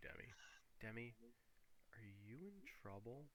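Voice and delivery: very quiet, hushed half-whisper. Voicing a character speaking to Demi, half-whispering. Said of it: "he whispers this to you".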